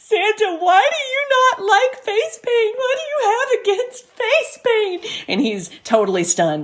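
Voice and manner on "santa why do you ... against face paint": put-on very high, sobbing little girl voice. Retelling a daughter questioning santa on the phone: imitating a crying child. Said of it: "the daughter is crying".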